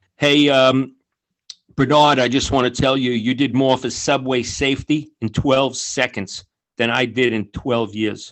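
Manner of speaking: ordinary talk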